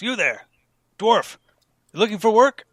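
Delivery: shrill, very loud, high call carrying far. Voicing an older fellow calling to a dwarf across the hall: calling out. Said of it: "calls out and says".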